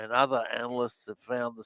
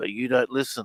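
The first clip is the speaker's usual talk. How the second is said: put-on whisper; 5 dB louder than usual. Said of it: "in a whisper".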